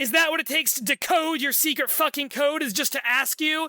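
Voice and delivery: heavy sarcasm with half disbelief. Recounting a story where one character answers another, retelling a sarcastic line. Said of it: "to Harrow very sarcastically".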